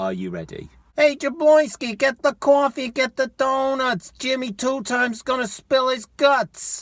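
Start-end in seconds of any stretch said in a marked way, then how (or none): 1.0-6.8 put-on New Yorker voice, very high. Speaker performs a short bit, in a put-on new york accent. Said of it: "I'll do my New York accent".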